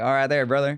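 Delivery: put-on Texas accent with a drawl. Showing regional Southern accents: Texas accent. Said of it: "And then there's, there's Texas".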